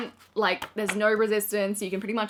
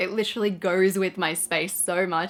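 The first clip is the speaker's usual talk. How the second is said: ordinary talk, nothing marked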